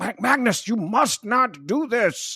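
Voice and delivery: very high, squeaky, silly dopey professor voice. Retelling a Magneto scene, quoting Charles's line, Charles in a dumb professor voice. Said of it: "professor voice".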